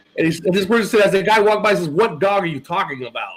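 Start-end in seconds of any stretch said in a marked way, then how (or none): 1.9-3.4 mocking, sarcastic, dismissive tone. Retelling what an old man walking by said: imitating a sarcastic reply.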